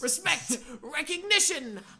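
eager put-on skeleton voice. Reading a game character's lines aloud: very into it as Papyrus. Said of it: "You're so into this".

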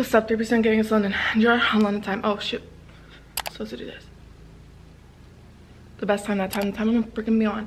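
breathless, panting speech. Starting a video intro right after running down the stairs, out of breath. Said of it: "Why am I always out of breath in all my intros?".

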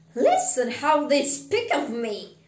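loud, sputtering, spluttering outburst. Narrating a man overhearing others talk of him, speaking to a ghost: spluttering. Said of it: "spluttered Scrooge".

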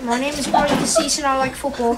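loud, British-sounding English accent. Asked to repeat his name introduction with his english accent: english accent. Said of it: "Can you say it with your English accent?".

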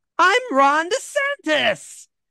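piercing, very high-pitched, shrill scream. Narrator voicing a gnome announcing who he is, in a shrill scream. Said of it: "in a shrill scream".

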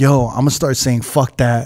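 ordinary talk

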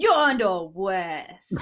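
put-on baby cop character voice. Performing a stage bit on request: baby cop character voice. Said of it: "can you do a little baby cop for us?".

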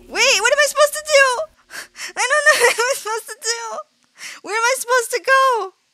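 very high, rushed, frantic and frightened panicked voice. Speaker who is glitching and doesn't know what to do, scared and panicking. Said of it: "I'm so scared that I'm glitching".

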